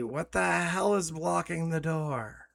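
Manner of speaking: put-on character shout. Narrating a tabletop game, voicing Kagrin as he turns to the party, shouting. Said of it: "shouts at the party".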